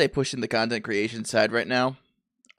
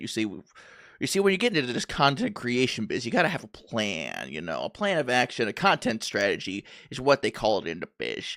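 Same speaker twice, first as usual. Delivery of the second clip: affected, lecturing put-on voice with swooping pitch. Speaker telling Chad about content strategy, put-on voice. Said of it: "I can't keep up with that voice".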